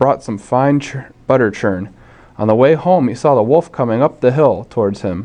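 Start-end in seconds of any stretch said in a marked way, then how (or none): none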